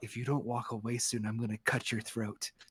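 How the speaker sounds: very quiet, deep, hushed whisper. Voicing a tiefling woman leaning down to the player's ear, whispering into an ear. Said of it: "leans down and whispers into your ear".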